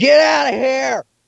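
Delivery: put-on startled shriek, very high and rasping. Retelling what the speaker screamed at an animal: retelling a scream. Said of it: "I jumped and I screamed".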